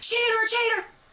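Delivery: mock high-pitched scream. Recounting a past confrontation, yelling at a cheating man as the accuser; retelling a scream. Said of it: "begging me to stop".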